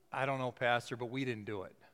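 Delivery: put-on anxious, unsure, nervous boy's voice. Retelling a boy's answer to the pastor: imitating a nervous boy. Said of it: "he nervously said".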